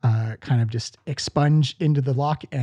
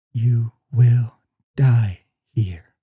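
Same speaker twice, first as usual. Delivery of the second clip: deep, slow, loud, reverberating disembodied voice; 5 dB louder than usual. Voicing a voice heard inside the players' heads: deep echoing voice. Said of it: "deep, verby echo come into the back of your skull".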